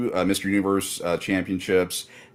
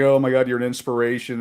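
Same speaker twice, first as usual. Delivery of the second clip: acted, tearful, high-pitched blubbering gush; 6 semitones higher than usual. Retelling meeting a deaf man signing a sword, acting out own blubbering. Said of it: "blubbering like".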